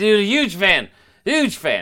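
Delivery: put-on very high, slow, sloppy drunken slurring. Retelling meeting someone while very drunk: imitating drunk slurring. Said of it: "just slurring every word imaginable".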